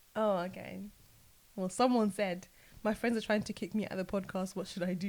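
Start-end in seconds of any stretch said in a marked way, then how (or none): none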